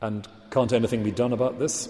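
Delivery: ordinary delivery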